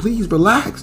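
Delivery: mock, very high, shrill, frantic-sounding yell. Speaker retelling how a man yelled at a woman breaking things, retelling a yell. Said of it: "He's yelling at her like".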